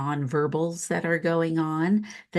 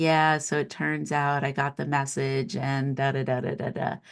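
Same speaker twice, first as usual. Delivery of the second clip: put-on glum, bland, gloomy tone; 3 semitones lower than usual. Retelling good news said in a bland tone: imitating a bland rainy-day-blues tone. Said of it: "rainy day blues tone to it".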